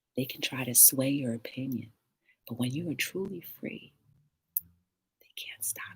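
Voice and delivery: whispered, very quiet, hushed, barely audible. Speaker talks to listeners: whispering. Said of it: "I don't know why I'm whispering".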